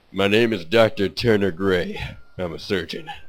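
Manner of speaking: deep, assertive, authoritative voice. Voicing a surgeon character introducing himself: deep, assertive Doctor Gray voice. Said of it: "kinda a deep, assertive voice like that".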